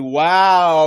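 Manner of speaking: ridiculous, drawn-out, sarcastic "wow". Retelling how panel hosts reacted to a guest: imitating a sarcastic "wow". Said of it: "in a sarcastic, ridiculous fashion".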